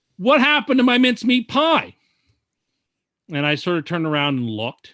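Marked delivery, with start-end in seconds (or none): 0.2-2.0 play-acted big, booming, resounding, high-pitched outburst. Retelling a man calling out to them while they shop, in a booming voice. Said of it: "I hear a voice booming saying".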